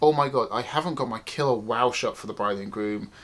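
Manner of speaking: ordinary delivery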